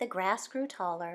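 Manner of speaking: plain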